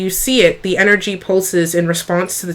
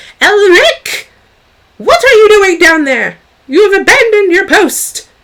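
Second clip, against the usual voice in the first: piercing, shrill, very high, raised voice; 13 semitones higher, 7 dB louder than usual. Narrating a scene where a professor calls down to Elric, in a shrill professor voice. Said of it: "you hear this shrill, um, loathed voice of one of the professors".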